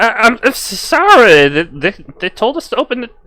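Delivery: nervous, high, stuttering little gnome voice. Voicing a gnome worker apologizing for opening the gate: stammering gnome worker. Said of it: "just like".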